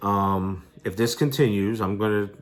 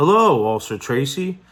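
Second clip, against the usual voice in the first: acted condescending, belittling tone, pitched up; 6 semitones higher, 6 dB louder than usual. Retelling a lieutenant's greeting in a barber shop: imitating Lieutenant Snail's condescending voice. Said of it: "condescending kind of voice".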